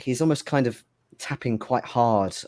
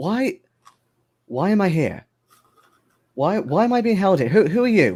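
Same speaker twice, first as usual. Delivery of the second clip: alarmed and startled, much higher and louder; 10 semitones higher, 6 dB louder than usual. Game master voicing a man who jerks his head up as the players enter: startled questions. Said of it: "immediately just jerks his head up".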